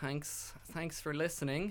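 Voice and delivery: ironic, insincere, sarcastic tone. Thanking the listeners while saying goodbye: sarcastic tone. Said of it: "Sarcastic tone again".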